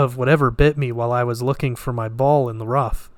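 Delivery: ordinary delivery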